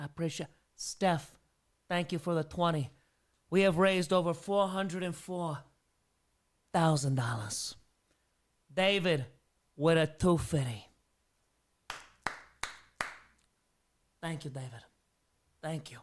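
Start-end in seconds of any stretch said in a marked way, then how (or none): 8.7-16.0 strained put-on character voice. Thanking donors during a fundraiser: the Don voice. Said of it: "That's gotta hurt your voice".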